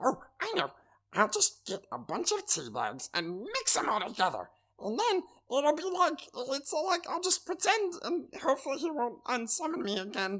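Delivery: small, fun, high little creature voice. Speaking in character as a small summoned creature: little guy character voice. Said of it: "I like that voice".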